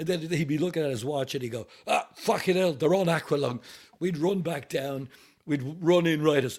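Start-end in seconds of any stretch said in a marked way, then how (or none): 1.9-3.6 put-on Cockney accent. Telling a story, quoting a man checking his watch, in a Cockney accent. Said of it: "Absolute Cockney Londoner".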